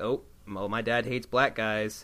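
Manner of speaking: ordinary delivery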